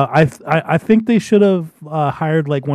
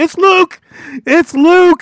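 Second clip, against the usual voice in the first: very high, loud, stretched-out yelling; 14 semitones higher, 5 dB louder than usual. Recalling seeing the cloak with father upstairs, retelling own yelling. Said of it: "because I was yelling".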